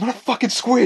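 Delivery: very high, very loud, shrill furious yelling shriek. Acting out how Mike reacts when called a squid: imitating Mike pissed off. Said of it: "he gets so pissed off".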